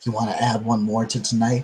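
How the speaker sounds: leaned-in half-whisper, close to the ear. Voicing a character leaning in to another: half-whispering in character. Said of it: "lean in and whisper".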